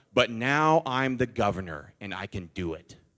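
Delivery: acted, self-satisfied, lordly, arrogant gloating. Retelling a governor's answer to reporters: imitating an arrogant, smug tone. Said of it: "he said it so arrogantly, so smugly".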